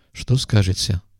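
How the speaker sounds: ordinary delivery, nothing marked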